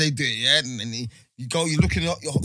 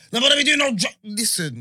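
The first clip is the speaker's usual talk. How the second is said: high, raised, shouting voice with scolding tone; 10 semitones higher, 4 dB louder than usual. Speaker acting out their mum's reaction, imitating mum raising her voice. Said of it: "You raising up your voice like".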